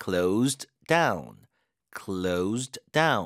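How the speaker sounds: down hit with stress and falling tune.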